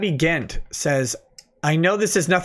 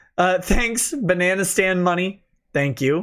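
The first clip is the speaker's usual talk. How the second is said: normal talking voice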